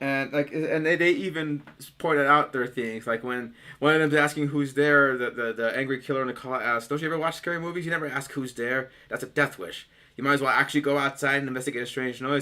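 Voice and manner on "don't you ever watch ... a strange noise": ordinary talk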